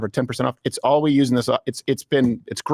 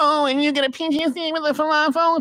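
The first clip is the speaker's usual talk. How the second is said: put-on very high, grating, slow, drawn-out girl voice. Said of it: "When she's like".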